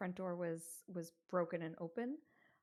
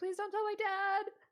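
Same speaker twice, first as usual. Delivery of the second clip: very high, loud, blubbering ugly crying; 14 semitones higher, 8 dB louder than usual. Retelling a girl who runs off, the speaker is imitating ugly crying. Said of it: "She's still ugly crying".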